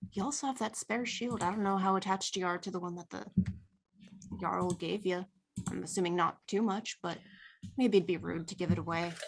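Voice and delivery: quiet, hushed voice. Leaning a little closer to another character to speak, lowered, hushed voice. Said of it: "Seahild leans a little closer to Sten and lowers her voice a bit and goes".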